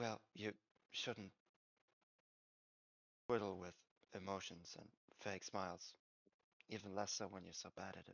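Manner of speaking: soft half-whisper under the breath. Narrator voicing a woman speaking almost to herself, half-whispering to herself. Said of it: "so she whispers to herself".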